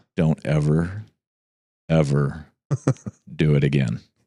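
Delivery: whispering. A parent recounts confronting kids who broke curfew, retelling a whisper. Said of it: "I walk in and I whisper".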